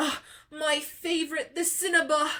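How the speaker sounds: put-on high New Jersey accent. Unsure how to say a word, imitating Meg saying it, New Jersey accent. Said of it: "Meg has a New Jersey accent".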